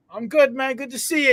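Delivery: put-on British accent. Retelling running into Charlie at the gym, doing Charlie's British accent. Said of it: "He says in his British accent".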